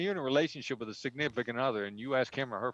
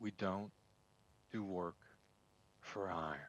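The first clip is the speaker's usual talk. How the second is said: very soft, low, hushed late-night radio DJ voice; 4 semitones lower, 11 dB quieter than usual. Negotiating by phone with the other side, in a late-night fm dj voice. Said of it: "I'd use my late night F M D J voice".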